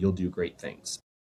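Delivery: put-on whispered voice. Retelling what the Grandmaster said after a hug: imitating a whisper. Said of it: "he whispered".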